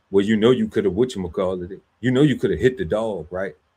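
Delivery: mocking, sarcastic tone. Retelling what law enforcement said: imitating someone speaking sarcastically. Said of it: "they told me that sarcastically".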